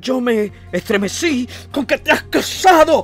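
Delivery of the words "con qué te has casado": shrill, very high, loud shouting. Narrator voicing the first-person hero shouting at Shvabrin. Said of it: "grité a Shbabrin".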